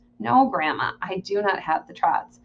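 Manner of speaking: ordinary delivery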